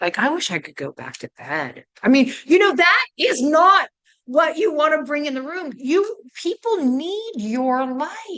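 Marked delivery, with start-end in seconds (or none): 0.2-1.9 very low, weary, sagging, downbeat tone. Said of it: "It really talks lower and lower".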